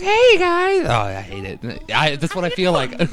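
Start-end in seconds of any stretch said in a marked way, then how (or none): 0.0-0.8 very high-pitched, cartoonish character voice. Showing how they sound on a recording, in a high-pitched cartoonish voice. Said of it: "I sound like a cartoon character on a recording. Like I got like a high pitched voice".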